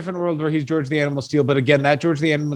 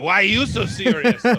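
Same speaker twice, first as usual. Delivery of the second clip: high-pitched, dopey, dumb villain voice; 6 semitones higher than usual. Imitating a wrestler who seems like the stupid Joker: Mad Dog Vachon as a stupid Joker. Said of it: "he's like the stupid Joker".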